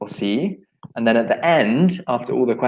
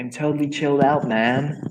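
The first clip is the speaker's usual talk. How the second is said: laid-back, put-on American surfer dude accent; 3 semitones higher than usual. Reading a quiz answer aloud, the speaker uses an American surfer dude accent. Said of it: "You mean the American accent".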